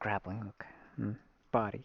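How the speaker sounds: soft, sleep-mode machine whisper. Imitating another character: thirteen's computer sleep whisper. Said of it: "his computer sleep whisper".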